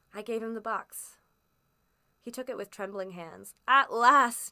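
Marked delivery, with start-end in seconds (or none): 3.6-4.5 booming, very loud outcry at full volume. Narrator reading a man's line as he takes the box: cried out. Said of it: "he cried".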